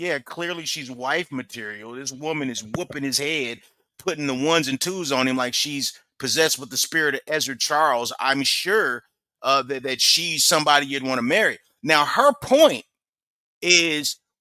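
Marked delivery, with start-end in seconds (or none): none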